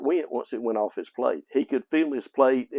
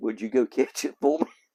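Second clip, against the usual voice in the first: mock earnest, dead-serious, no-joke tone. Retelling a relative's request to catch a potato: imitating a serious request. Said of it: "He just said it just as serious".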